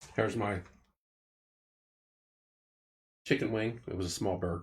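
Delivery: talking while eating. Eating finger food while others watch, talking while eating. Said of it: "watch me scarf finger food".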